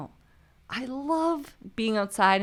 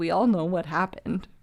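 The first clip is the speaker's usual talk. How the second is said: mock flat deadpan delivery; 3 semitones lower than usual. Retelling the reply to Carly's question about what happened, deadpan. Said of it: "looked at him like deadpan".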